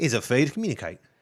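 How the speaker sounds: put-on Australian-accented delivery. Giving a movie quote for another player to guess: australian accent. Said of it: "the accent is Australian".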